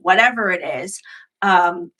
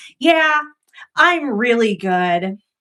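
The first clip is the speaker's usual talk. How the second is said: put-on slow, sassy, self-assured, cheeky toddler voice; 3 semitones higher than usual. Retelling answering her mom into the camera: imitating own sassy three-year-old self. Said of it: "sassy little three-year-old me".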